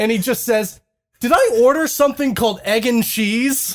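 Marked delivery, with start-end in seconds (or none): 1.2-3.8 furious, disbelieving tone. Retelling a man's furious reaction to his food order, imitating an angry man. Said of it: "And he's so angry".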